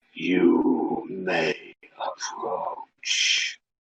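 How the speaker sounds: ominous, creaky, echoing, rough, you dragged out. Game master voicing a skeleton that speaks without moving its mouth, ominous echoing voice. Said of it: "you hear an ominous voice echoing from the skeleton itself".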